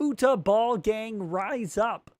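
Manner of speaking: high-pitched cartoon frog puppet voice. Streamer reading a viewer's chat message aloud, in Kermit voice. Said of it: "in Kermit voice".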